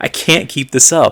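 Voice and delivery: acted freaking out. Retelling a trapped game character's plea: imitating a panicked man. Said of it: "he's, like, freaking out".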